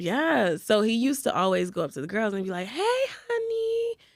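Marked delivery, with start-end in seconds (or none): 2.7-3.9 very high-pitched voice. Retelling how the dishwasher greeted the girls: imitating Gio saying hey honey. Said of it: "That's just literally how he said it".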